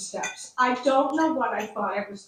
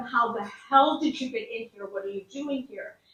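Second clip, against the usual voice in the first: acted-out seething, outraged, livid, furious tone. Retelling confronting a man found inside the house: imitating livid anger.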